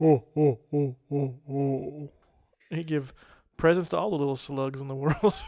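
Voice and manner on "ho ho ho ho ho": very slow, drawn-out ho-ho laugh, every ho dragged out. Speaker showing how a Santa-Jabba mashup would laugh, Jabba the Hutt Santa laugh. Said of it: "that's how he'd say".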